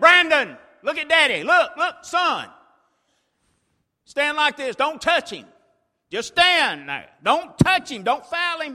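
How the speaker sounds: very loud, high-pitched shout. A father retelling how he yelled at his son Brandon, retelling a yell. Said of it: "I'm yelling at him".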